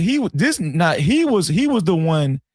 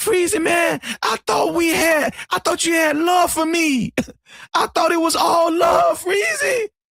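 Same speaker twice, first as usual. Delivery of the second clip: put-on crying voice, higher; 12 semitones higher than usual. Freezy retelling what Anton said to him, imitating Anton crying. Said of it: "Freezy wasn't the one crying".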